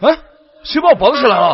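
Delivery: loud, high, startled, alarmed yell. A character finds they have been tied up and asks who did it, yelling. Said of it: "嚷嚷什么呀？".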